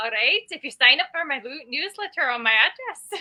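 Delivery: failed Scottish accent that drifts into sounding Irish. Asked to plug a newsletter, doing a bad Scottish accent that sounds Irish. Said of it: "I came out way more Irish than Scottish".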